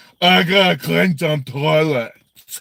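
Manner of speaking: slow, loud, open-mouthed slack-jawed drawl. Imitating a mouth breather whose mouth hits his chest: imitating Kill a Milla. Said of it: "when I imitate him".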